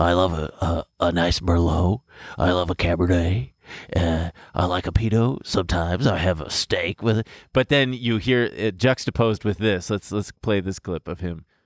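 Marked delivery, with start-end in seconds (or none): 0.0-7.3 low, soft-toned, soft-spoken host delivery. Imitating a man who did a Sunday show all about wine, put on a soft voice. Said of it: "he spoke in a soft voice".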